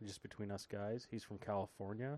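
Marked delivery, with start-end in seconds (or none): 1.1-2.2 hushed voice, quieter. Telling the others where a possible guest is from, said quietly. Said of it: "I'm gonna say this quiet so nobody really hears me".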